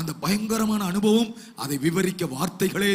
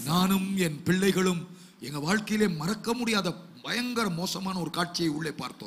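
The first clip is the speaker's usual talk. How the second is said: ordinary talk, nothing marked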